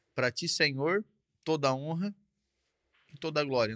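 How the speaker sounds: ordinary delivery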